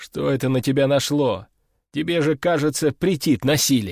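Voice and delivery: plain reading voice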